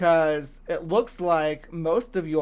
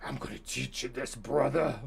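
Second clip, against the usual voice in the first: rough, hushed, tough-sounding professional wrestler growl; 3 semitones lower, 8 dB quieter than usual. Imitating him for when he starts calling them brother, pro wrestler voice. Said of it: "Like a professional wrestler".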